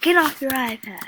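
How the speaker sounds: loud, high-pitched yelling. Telling someone on screen to get off her iPad: yelling at her. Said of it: "I'm gonna yell at her".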